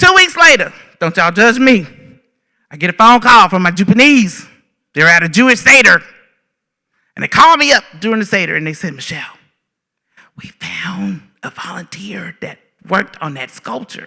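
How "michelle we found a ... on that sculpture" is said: soft, hushed whisper. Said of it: "why are we whispering again".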